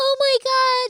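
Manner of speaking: tearful crying, very high-pitched. On a date, the speaker puts a girlfriend on speakerphone, imitating Michaela sobbing. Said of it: "She's sobbing".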